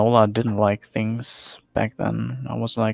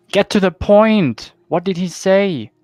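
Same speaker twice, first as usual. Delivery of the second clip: shrill, loud shouted yell; 9 semitones higher, 6 dB louder than usual. In a drama scene, interrupting a woman who talks while cooking, yelling. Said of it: "don't yell at me!".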